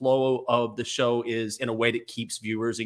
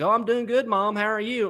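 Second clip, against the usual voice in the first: very high, homegrown West Texas twang, pitched way up; 10 semitones higher than usual. Retelling how she talks when her mom calls: West Texas accent. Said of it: "it always slips out".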